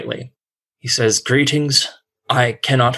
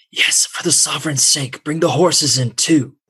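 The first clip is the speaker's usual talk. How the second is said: hushed stage whisper; 3 semitones higher than usual. A game master voices a man urging the party inside: half-whispering. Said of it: "you hear him whisper".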